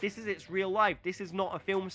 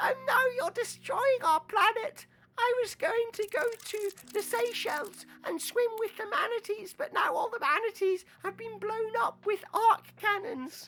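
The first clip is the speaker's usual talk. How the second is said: very high put-on little-kid voice. Narrating a story where kids in a trench coat go insane, in a child voice. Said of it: "There's my child voice".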